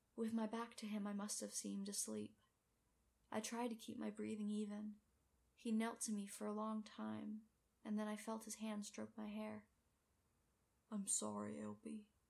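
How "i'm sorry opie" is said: inward mutter, mostly to oneself. Kneeling by Opie, who seems asleep, speaking more to himself: muttered softly. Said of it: "he muttered, softly".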